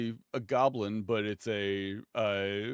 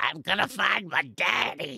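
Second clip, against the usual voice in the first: rough, high, creaky, drawn-out little goblin voice; 9 semitones higher, 4 dB louder than usual. Acting out a little goblin with horns and hooves: little goblin voice. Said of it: "this little goblin with horns and hooves".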